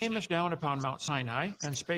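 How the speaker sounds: plain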